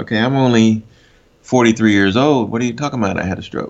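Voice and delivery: ordinary talk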